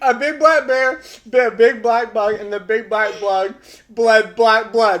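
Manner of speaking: very loud fast yelling. Saying a tongue twister with candy in the mouth, yelling. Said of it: "Why are you yelling?".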